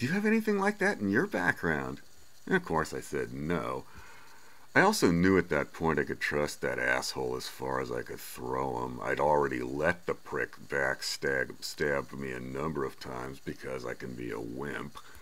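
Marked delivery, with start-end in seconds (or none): 0.0-2.0 small, wary, very high, cautious little voice. Retelling an untrustworthy guy's question, imitating a cautious little voice. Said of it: "a cautious little voice".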